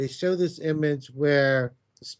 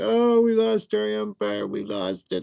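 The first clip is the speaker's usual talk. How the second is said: acted-out crying wail, high, swooping, drawn out; 6 semitones higher than usual. Retelling a vision of roach-like creatures coming out: imitating crying creatures. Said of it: "crying, like".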